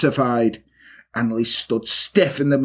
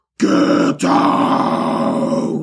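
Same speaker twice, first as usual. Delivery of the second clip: very low, rough, harsh guttural scream; 7 semitones lower, 3 dB louder than usual. A woman who just tore up her rosary turns on Peter: rough, guttural scream. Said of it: "in a rough, guttural voice screamed".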